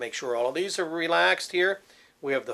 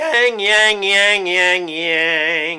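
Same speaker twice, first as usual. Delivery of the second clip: nasty witchy tone, much slower; 3 semitones higher, 9 dB louder than usual. The speaker demonstrates a vocal exercise for the listener, nasty, witchy sound. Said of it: "that nasty, witchy sound".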